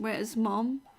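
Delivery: ordinary delivery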